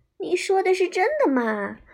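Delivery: eager, thrilled, excited, high and animated. The caterpillar asks the rabbit whether what it said is true, excited. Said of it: "毛毛虫兴奋的眼睛都闪闪发亮了".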